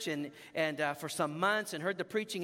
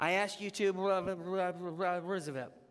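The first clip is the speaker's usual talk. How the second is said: put-on mumbled, indistinct words. Retelling how the man leading him in the sinner's prayer sounded, imitating a mumbled prayer. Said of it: "It was kind of mumbled".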